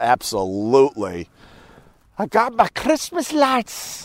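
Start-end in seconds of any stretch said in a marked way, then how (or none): 2.2-4.1 horrible fake Scottish accent, high and slow. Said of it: "fake, horrible Scottish accent".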